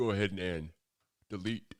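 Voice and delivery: speaking through a yawn, words stretched. Finishing scroll work and deleting the under drawing on stream: yawning. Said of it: "I don't know why I'm yawning".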